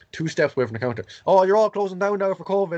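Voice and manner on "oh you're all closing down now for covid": high, loud mock shout. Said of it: "shouting in the shop".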